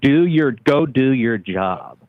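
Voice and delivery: mock restrained, contained, mild yell. Speaker retelling what a lady screamed at a town hall: imitating a lady screaming. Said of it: "what the lady screamed at the very end".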